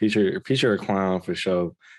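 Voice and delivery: plain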